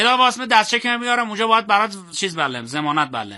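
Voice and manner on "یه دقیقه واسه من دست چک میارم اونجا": quickly rattled off, fast and rushed. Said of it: "یه بار دیگه بگو".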